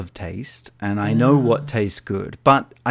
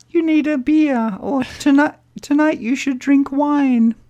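very high, loud, tiny little lady voice; 5 dB louder than usual. Speaker imagines a device voice giving advice, in a little lady's voice. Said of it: "It's like a little lady's voice".

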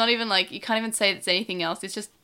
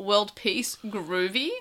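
mocking, sarcastic throwaway delivery. Retelling a dub line said by a bully: imitating a sarcastic remark. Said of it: "sarcastically says".

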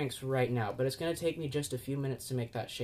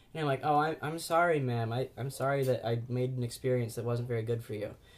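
normal talking voice

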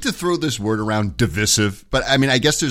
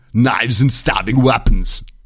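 loud, slow, deliberate voice; 2 semitones lower, 5 dB louder than usual. Retelling a Terminator 2 line in an Arnold Schwarzenegger impression. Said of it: "That's my Arnold Schwarzenegger".

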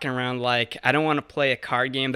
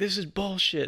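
put-on, pitched-up, held-in, restrained screaming; 6 semitones higher, 4 dB quieter than usual. Retelling how their ride home reacted to losing money: retelling a scream. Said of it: "He's like screaming".

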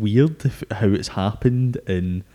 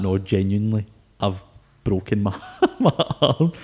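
usual speaking voice

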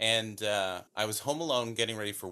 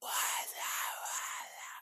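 slow, whispery, ghostly hissing voice. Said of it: "this really whispery voice".

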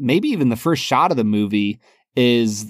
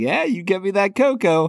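creeping, sly, high-pitched tone; 8 semitones higher than usual. Retelling a movie scene, the sheriff creeping and smiling: imitating Buster smiling. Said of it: "smiling at her, like".

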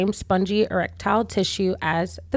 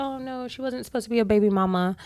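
let-down, dismayed, deflated, disappointed tone; 2 semitones higher, 4 dB quieter than usual. Retelling how people reacted to the news: imitating disappointed people. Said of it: "disappointed because they're like".

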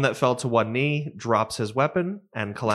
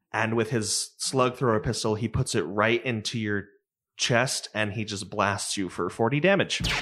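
ordinary talk, nothing marked

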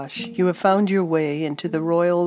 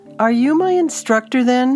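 loud, high-pitched sarcastic shout; 7 semitones higher, 6 dB louder than usual. After a fall, a woman answers an unseen voice in the trees; shouting sarcastically. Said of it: "she shouted sarcastically to the trees".

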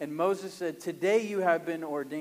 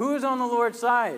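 ringing, raised, high-pitched shout; 6 semitones higher, 7 dB louder than usual. Reading the scene where Moses calls out at the camp gate: shouting as Moses. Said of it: "But he shouts this".

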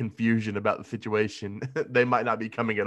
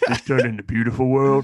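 put-on drunken voice, delivered louder; 8 dB louder than usual. Joining in retelling the interview: drunk Vin Diesel impression. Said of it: "Vin Diesel drunkenly doing an interview".

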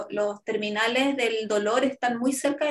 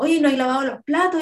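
mock-angry scolding tone, louder; 2 semitones higher, 6 dB louder than usual. Retelling how a partner joked about dishes: imitating an angry scolding. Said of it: "como que enojado me hablaba así".

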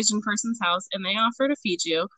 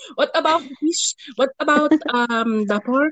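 bad put-on Filipino accent, higher; 4 semitones higher than usual. Retelling what his grandmother asked about the food, the speaker uses a terrible Filipino accent. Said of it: "This is a terrible Filipino accent".

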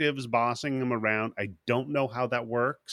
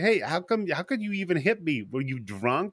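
high, put-on, bitchy, nagging, scolding tone; 5 semitones higher than usual. Retelling a movie scene where a woman complains after a crash: imitating someone bitching. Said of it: "she bitches at her".

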